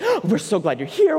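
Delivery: happy, thrilled, excited, eager tone. Act out a wife greeting you, a single male, while her husband stays calm, imitating an excited wife. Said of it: "she would get excited".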